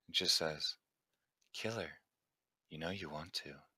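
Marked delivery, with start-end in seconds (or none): 1.5-3.5 very soft, hushed, seductive, sultry female voice. Voicing a different voice that a character hears, sultry female voice. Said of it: "A sort of sultry female voice".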